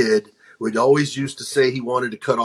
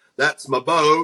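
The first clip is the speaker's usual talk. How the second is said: put-on slow southern drawl, higher; 3 semitones higher than usual. Retelling a movie scene line as the character: Forrest Gump impression. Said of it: "impersonation of Forrest Gump".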